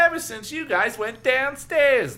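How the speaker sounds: bragging, very high and very loud. A still-invisible speaker answers the narrator's question: bragging. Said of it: "and bragged".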